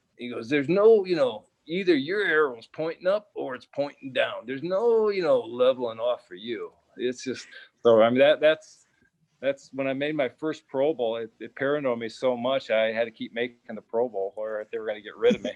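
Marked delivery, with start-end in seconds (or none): 0.5-6.7 damaged, injured-throat sounding voice. Retelling what his line coach said after the season: imitating Dick Stanfield's damaged voice. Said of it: "he talked like this 'cause he got kicked in the throat and he tore his larynx".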